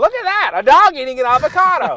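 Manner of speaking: high, loud put-on Southern accent. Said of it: "he's like this Southern kinda guy that talks like this".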